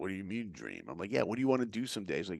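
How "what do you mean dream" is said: very low, deep, quiet hushed murmur. Quoting a high school kid's reply about his dream: Rocky voice. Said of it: "doing my Rocky voice".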